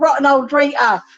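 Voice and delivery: put-on joking Cockney accent. Retelling how a man teased the speaker with a nickname, imitating his Cockney accent. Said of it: "in his Cockney accent".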